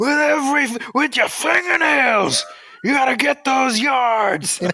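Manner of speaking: very high, full, big movie-speech voice. Imitating the Batman voice giving a locker-room speech: Al Pacino in Any Given Sunday. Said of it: "He'd sound like Al Pacino in, in Any Given Sunday".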